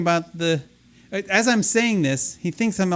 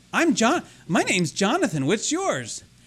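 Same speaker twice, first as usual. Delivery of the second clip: put-on tiny, sweet, innocent little-kid voice; 3 semitones higher than usual. Retelling what a voice said to the speaker, in a sweet childlike voice. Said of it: "innocent, childlike voice. This sweet little voice".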